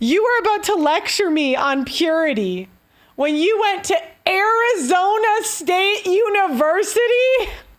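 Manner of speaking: mad, heated voice. Speaker venting at someone who was about to lecture them, angry. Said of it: "I am pissed".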